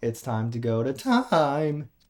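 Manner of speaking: slow, deliberate voice crack. Quoting a favorite part, done with a deliberate voice crack. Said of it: "purposefully uh as a voice crack".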